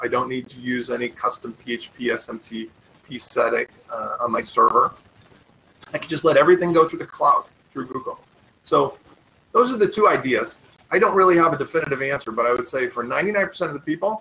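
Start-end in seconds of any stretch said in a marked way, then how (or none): 10.9-14.2 rapid-fire fast talk. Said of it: "I know I'm talking fast".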